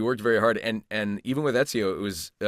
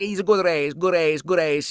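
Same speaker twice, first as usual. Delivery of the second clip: put-on Italian-accented English, higher and louder; 7 semitones higher, 5 dB louder than usual. Retelling a champion racer's post-race interviews: Valentino Rossi impression. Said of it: "and he'd be like".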